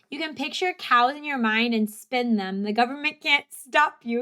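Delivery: ordinary delivery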